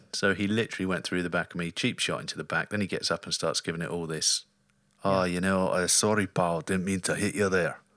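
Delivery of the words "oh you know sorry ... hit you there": poor, bad put-on Scottish accent. Quoting the man who hit him from behind, in a bad Scottish accent. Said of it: "That was not a great accent".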